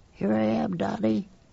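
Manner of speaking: very high, faint, muffled voice from far away. Reading a story where a boy answers from hiding: faint distant voice. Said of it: "His voice came faintly, as if from under the ground".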